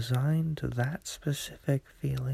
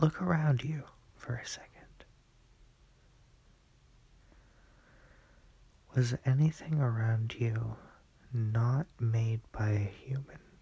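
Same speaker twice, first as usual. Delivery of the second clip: speaking quietly; 3 dB quieter than usual. Talking to viewers late at night, speaking quietly. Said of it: "I'm gonna talk kinda quiet".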